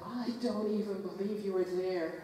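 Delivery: ordinary delivery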